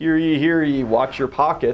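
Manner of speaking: loud, high-pitched town crier proclamation voice. Suggesting a town crier warn the town about pickpockets: town crier proclaiming. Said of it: "sending a town crier into the middle of town".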